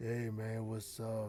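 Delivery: put-on tired-sounding voice. Showing how a low-energy streamer sounds: imitating a tired-sounding streamer. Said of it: "you sound tired all the time".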